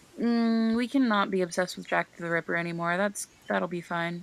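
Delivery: normal talking voice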